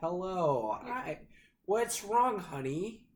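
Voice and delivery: slow British-tinged American accent. Describing how British people sound doing American accents: British person's American accent. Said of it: "when like British people try to do an American accent".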